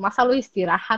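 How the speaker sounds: ordinary talk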